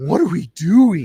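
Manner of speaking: very loud, slow, high, drawn-out shout. Doing an impersonation of Dez for the others: Dez impersonation. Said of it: "the Dez impersonation".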